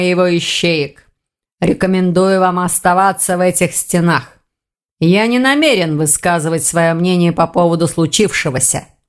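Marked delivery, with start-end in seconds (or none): none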